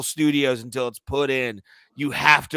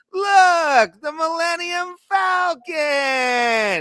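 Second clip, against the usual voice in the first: very high, sarcastic, nostalgic gushing voice; 4 dB louder than usual. Describing a guy's sarcastic movie watch-along comments: mock-gushing nostalgia voice. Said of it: "like nostalgia voice".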